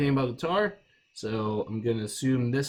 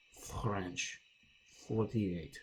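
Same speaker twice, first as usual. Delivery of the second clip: very quiet, terrible, bad fake French accent; 5 semitones lower, 11 dB quieter than usual. Reading a word problem aloud to the class, in a terrible French accent. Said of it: "That's a terrible French accent".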